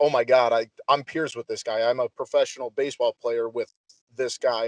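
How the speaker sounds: ordinary talk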